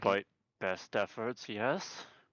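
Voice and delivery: clenched-teeth strained delivery. Character answers another's question in a role-play scene; through gritted teeth. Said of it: "Kind of through gritted teeth".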